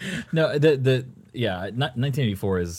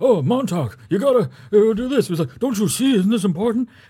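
put-on very old man's voice, higher and louder; 13 semitones higher, 6 dB louder than usual. Retelling the audiobook reading of Fahrenheit 451: imitating Ray Bradbury. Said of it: "his voice is very like this".

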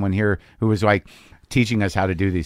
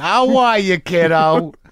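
hammy put-on dad voice, high and loud; 8 semitones higher, 5 dB louder than usual. Voicing the other speaker's dad greeting his kid, imitating someone's dad. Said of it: "Why am I giving your dad that voice?".

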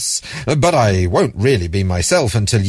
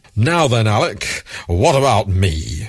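put-on Devon accent. Narrating a story, the changed voice speaks to Alec in a kindly baritone with Devon accent. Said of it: "The voice had changed to a kindly baritone with a Devon accent".

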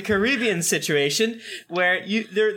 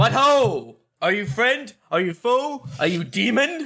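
theatrical declaiming, proclaiming voice. In a tabletop game, a player's character casts a spell at a boy: booming voice. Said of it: "I make a booming voice at this boy".

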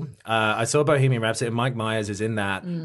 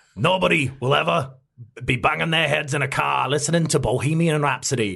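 put-on Scottish accent, pitched higher; 5 semitones higher than usual. Quoting a line from a movie after others ask for the accent: imitating Mike Myers' Scottish accent. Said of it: "do the accent".

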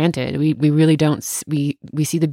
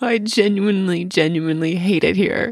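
laughing while talking, pitched higher; 4 semitones higher than usual. Talking about coming home from travel, laughing while talking. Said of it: "I'm laughing, but I'm kind of serious".

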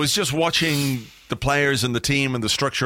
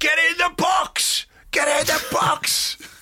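mock shrill, high, drawn-out, repeated shout. Recounting a guy behind him who kept shouting; imitating a guy shouting. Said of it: "who just kept shouting".

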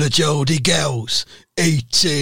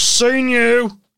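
very high-pitched put-on voice; 9 semitones higher than usual. Retelling meeting someone in a bakery section: imitating Jeremy Corbyn. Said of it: "His voice goes".

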